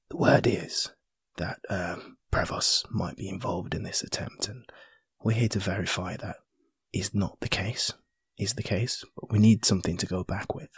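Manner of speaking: soft, hushed, private whisper. Retelling leaning in close to someone to speak, whispering. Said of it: "I lean in and whisper".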